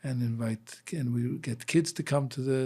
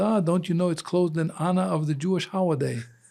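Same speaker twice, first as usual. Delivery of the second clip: loud, high, put-on Chinese accent; 6 semitones higher, 6 dB louder than usual. Retelling what the gardener told him at the locked synagogue, Chinese accent. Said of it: "he says in his Chinese accent".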